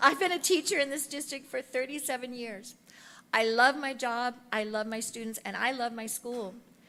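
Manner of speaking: moved, heartfelt delivery. A retiring teacher speaking about her school and students, emotional. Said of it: "sorry, I'm retiring, so I'm getting emotional".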